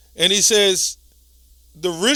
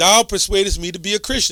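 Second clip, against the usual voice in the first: normal talking voice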